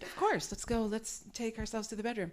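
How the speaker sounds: delicate, hushed, soft and gentle ladylike voice. Retelling a reply to a partner: retelling own words gently, like a lady. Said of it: "I said gently and like a lady".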